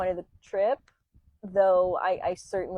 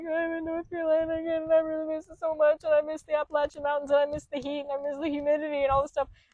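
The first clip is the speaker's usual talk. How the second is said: high, sobbing, crying through every word; 9 semitones higher than usual. Retelling driving into north carolina, acting out past self: imitating own past crying. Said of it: "And I was like crying".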